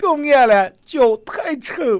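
put-on tearful voice. Retelling what a woman said while crying, imitating a woman crying. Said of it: "这个女的哭着说".

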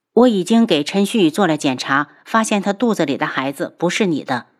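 plain reading voice

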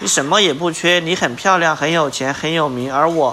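ordinary delivery

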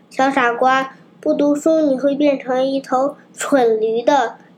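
plain reading voice

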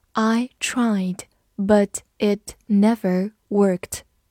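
slow, even reading, word by word.

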